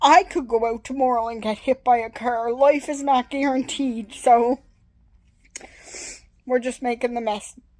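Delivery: choked-up voice, breaking, words catching. Addressing viewers, getting emotional mid-thought, choked up. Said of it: "I can't talk now".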